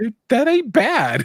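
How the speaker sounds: high, loud shout sounding impressed.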